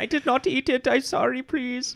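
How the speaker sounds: put-on German accent, very high and slow. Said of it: "the Dutch accent is actually a German accent".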